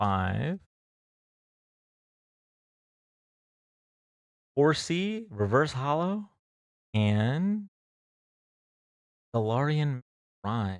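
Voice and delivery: soft, hushed ASMR voice. Livestreamer reading out Pokemon card names to viewers, ASMR voice. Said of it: "I keep going back to the A S M R voice".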